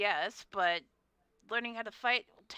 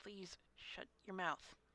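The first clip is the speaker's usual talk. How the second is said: whispered, muttered aside under the breath; 12 dB quieter than usual. Voicing a character who mutters to a talkative companion: muttering under his breath. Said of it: "saying under his breath in Draconic".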